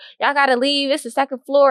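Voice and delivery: put-on yelling. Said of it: "she was yelling in a microphone".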